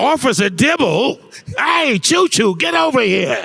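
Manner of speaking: very high-pitched cartoon alley cat voice. Discussing cartoon voices, the speaker does the way Top Cat talks. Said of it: "if you watch Top Cat, the way he says".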